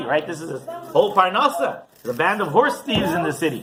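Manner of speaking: plain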